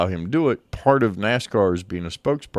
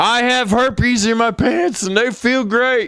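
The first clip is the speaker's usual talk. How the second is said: very high, loud, all-out passionate screaming; 5 dB louder than usual. Retelling a prank call where the caller was made to scream the line: imitating someone screaming.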